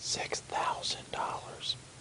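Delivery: very soft, hushed whisper. Telling the other speaker a camera's price: whispering. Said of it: "I'm gonna whisper it in your ear".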